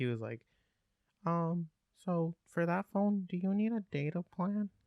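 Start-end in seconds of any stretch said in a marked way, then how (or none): 1.2-4.7 put-on high, slow, drawn-out young child's voice. Retelling a kid asking his tutor about a phone, in a little kid voice. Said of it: "This is my best little kid voice".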